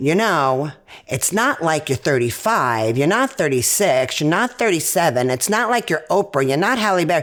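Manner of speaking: ordinary talk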